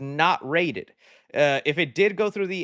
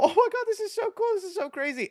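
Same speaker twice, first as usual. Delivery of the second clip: put-on giggling, pitched very high, laughing; 13 semitones higher than usual. Retelling own laughing reaction to a horror film opening. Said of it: "I start laughing. I go".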